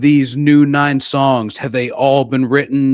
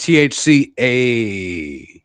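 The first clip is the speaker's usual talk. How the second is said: very slow, cool drawl stretching out the A; 2 semitones lower than usual. Showing how to say it cool: Fonzie voice. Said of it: "You gotta say it like the Fonzie".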